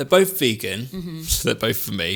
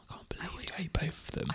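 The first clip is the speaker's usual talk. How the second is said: mock whisper, higher and quieter; 4 semitones higher, 16 dB quieter than usual. Imitating the other speaker whisper arguing behind the guests' backs: imitating a whisper argument. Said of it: "A S M R. Let me do it".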